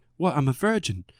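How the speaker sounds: put-on, fake British accent. Retelling a movie scene, the speaker quotes the woman's reply in a put-on british accent. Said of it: "I don't know why I gave her a British accent".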